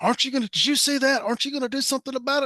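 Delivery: piercing, high, shrill screaming. Retelling a driver who rolled down his window at him: retelling a driver screaming. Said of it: "he starts screaming at me".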